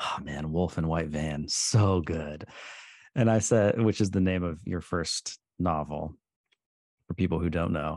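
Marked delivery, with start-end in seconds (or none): 0.0-2.4 muttered quietly under the breath. Retelling what he said while texting a playlist: imitating someone muttering under his breath. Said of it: "under his breath, as an aside".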